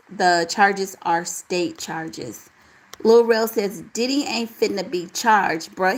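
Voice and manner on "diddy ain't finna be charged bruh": ordinary talk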